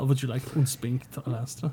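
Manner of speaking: put-on German accent. Repeating a character's line back to a co-host, in a put-on german accent. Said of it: "that German accent is".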